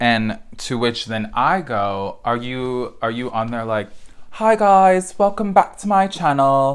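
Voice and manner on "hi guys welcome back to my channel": very high, loud, horrible fake British accent. Asking a man with millions of subscribers how he opens his channel: horrible British accent. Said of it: "do a horrible British accent".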